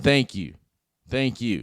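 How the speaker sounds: put-on heartfelt, sincere delivery in an American accent. Showing how a heartfelt thank-you should sound: heartfelt American thank-you. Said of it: "like this".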